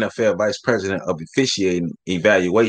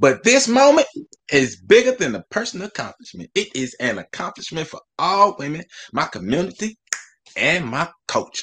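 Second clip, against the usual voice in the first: put-on pitched-up, half-grandma old auntie voice; 9 semitones higher than usual. Reading an NFL official's statement aloud, Chaka voice like an old auntie. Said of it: "why Shaka sound like somebody like grandma".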